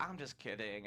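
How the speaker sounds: normal talking voice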